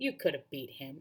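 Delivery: ordinary delivery, nothing marked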